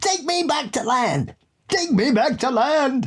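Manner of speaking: mock frantic, very high panicked scream. Describing a clip where a killer whale jumps near a boat, the speaker imitates a man screaming. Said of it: "he just starts screaming".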